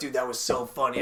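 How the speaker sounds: plain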